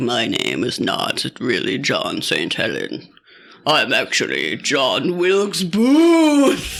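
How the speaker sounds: put-on low, old-fashioned, theatrical, dramatic declaiming voice. Act out a feverish man on his deathbed speaking to a lawyer, in an old-timey dramatic voice. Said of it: "What voice is that?".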